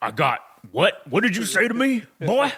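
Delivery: put-on typical Southern US good-old-boy accent. Act out Otis answering the British guys who ask about crisps, in an Otis voice, Southern American guy. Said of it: "Southern like America guy".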